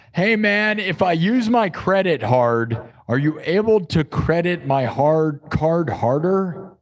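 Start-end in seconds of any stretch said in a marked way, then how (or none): none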